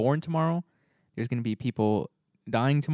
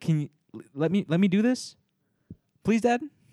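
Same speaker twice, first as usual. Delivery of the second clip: mock pleading child voice, higher; 6 semitones higher than usual. Retelling how a kid asks a dad for freedom: imitating a kid pleading with dad.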